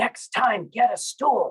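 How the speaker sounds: loud, high, carrying stage whisper. Retelling what the pastor said while walking past: imitating a loud stage whisper. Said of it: "in this very loud stage whisper".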